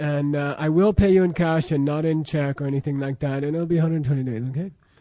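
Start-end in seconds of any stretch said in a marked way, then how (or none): 3.4-4.5 very soft and hushed, quieter and lower. Repeating a buyer's terms in a diamond deal, said very softly. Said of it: "You said 120 days very softly".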